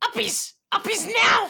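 very high, creaky, rough goblin screech. A goblin runs over to a character and yells at the player, goblin yelling. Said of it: "it yells at you".

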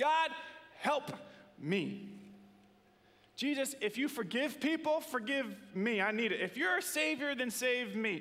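high crying-out voice.

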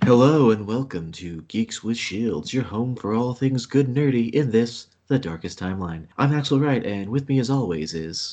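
oversmooth, silky, creepy radio announcer voice. Host welcoming listeners to the show Geeks with Shields, silky NPR voice. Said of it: "Your NPR voice has gotten even silkier".

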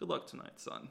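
menacing, ominous, hushed whisper. Retelling what Radish said to Jimmy after almost catching him, mock-ominous. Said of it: "Very ominously".

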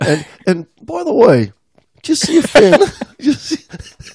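high-pitched mock British accent. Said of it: "Stop with that accent".

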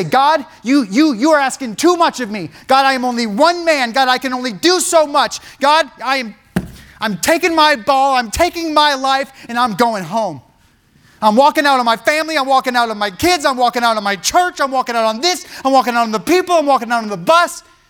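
exasperated, fed-up, angry outburst. Speaker acts out what a frustrated person says to God, acting out an angry outburst. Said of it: "Anger kicks in, and you say".

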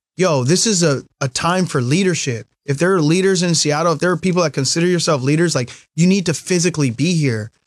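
ordinary delivery

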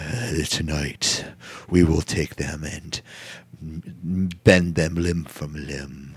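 very low, very slow, seductive and menacing. Imitating a wrestler's backstage interview line: imitating a very sexual voice. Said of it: "he has a very sexual voice".

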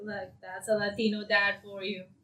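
normal talking voice

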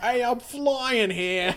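put-on very high New York accent. Speaker imitates V's bird from the game in a New Yorker stereotype voice. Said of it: "just sounds like a New Yorker stereotype".

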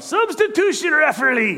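very high, yelled call. Retelling how the soccer coach called for a substitution: imitating coach yelling. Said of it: "he would yell out when the play would stop".

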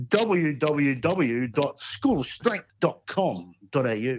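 radio announcer-style voice. Podcast host reading out the show's website address: radio voice. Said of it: "I've got to use my radio voice when I do this".

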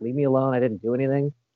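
ordinary talk, nothing marked

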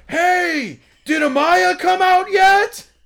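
loudest possible, very high, drawn-out yell. Retelling how a guy leaned over the railing and yelled a question, retelling a very loud shout. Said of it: "in like the loudest fucking voice possible".

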